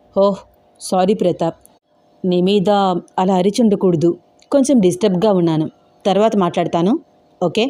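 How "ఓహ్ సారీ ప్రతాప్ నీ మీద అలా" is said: ordinary delivery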